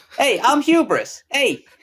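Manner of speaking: put-on New York accent. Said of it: "He's gonna be the New York guy".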